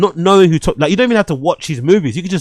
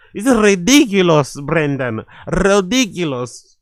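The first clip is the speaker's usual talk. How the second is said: put-on Colombian Spanish accent. Imagining someone playing up an accent at home: imitating Sofia Vergara accent. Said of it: "I bet she puts that Sofia Vergara accent on".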